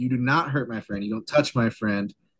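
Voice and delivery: ordinary talk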